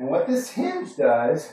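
voice catching, cracking and breaking. Explaining what a hinge does during an exercise demonstration, cracking voice. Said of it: "my voice is cracked".

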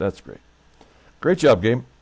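sarcastic, mock-congratulating, mock-praising tone. Reacting to the opposing catcher's four triples in the stats: sarcastic. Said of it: "as I like to say whenever I'm being sarcastic".

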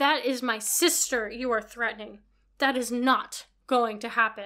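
spoken in a hiss. Reading a story aloud, a woman defends her sister from a man, hissing. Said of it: "she hisses".

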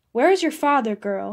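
disrespectful, insulting tone. The Count, lying on cushions, questions Ursula, insolent. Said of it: "His tone was insolent".

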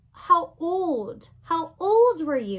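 loud shouting. Narrator reading the pea's line to a boy, shouted. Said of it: "shouted the pea".

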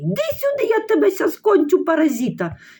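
screaming in a strange, wild, swooping voice. Narrating a mother yelling for Bohdan, screaming in a strange voice. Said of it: "не своїм голосом кричить мати".

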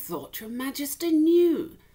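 loud put-on startled voice. A lord answers the king, pretending to be startled. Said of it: "pretending to be startled".

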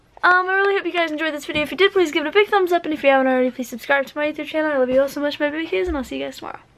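very fast, rushed, rattled-off breakneck patter. Youtuber signing off to viewers at the end of a video, talking very fast. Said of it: "Why do you say it so fast?".

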